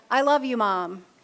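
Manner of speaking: ordinary talk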